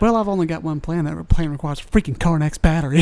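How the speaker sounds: ordinary delivery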